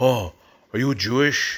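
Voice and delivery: put-on Israeli accent. Imitating people at community events asking a question: Israeli accent. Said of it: "I'm kinda trying to do an Israeli accent there".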